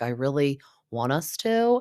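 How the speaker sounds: ordinary delivery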